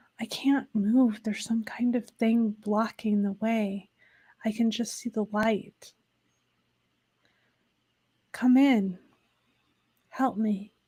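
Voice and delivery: quiet pleading voice. Voicing an unseen voice calling from behind a wall: quiet pleading voice. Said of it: "Quietly, you hear the voice say".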